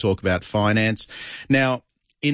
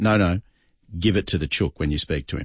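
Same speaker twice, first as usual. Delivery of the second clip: put-on stern voice, lower; 4 semitones lower than usual. Retelling how a man repeated his instruction, quoting someone in a very stern voice. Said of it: "in a very stern voice".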